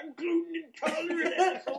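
mock yelling. Retelling a woman at a restaurant yelling at her husband: retelling a woman's yell. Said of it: "she's just yelling".

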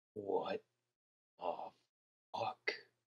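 very quiet, barely audible mutter under breath. A game narrator voices a character whom only those nearest can hear, muttered under his breath. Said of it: "hear him like mutter under his breath".

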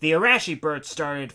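ordinary delivery, nothing marked

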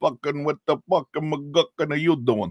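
poorly done New York accent. Imitating Brits doing a New York accent badly: bad Goomba New York accent. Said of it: "this kind of Goomba".

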